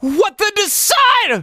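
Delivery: voice breaking upward. Speaker repeating a phrase while experimenting with their voice, voice cracking. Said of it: "my voice cracked a little bit".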